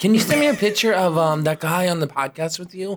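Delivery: plain motherly voice. Speaker quotes their mom in a story, imitating mom's voice. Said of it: "This is my mom voice".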